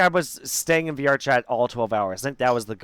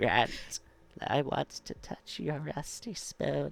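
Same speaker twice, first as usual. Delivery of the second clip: eerie, creepy whispered put-on voice; 13 dB quieter than usual. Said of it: "It's a creepy voice".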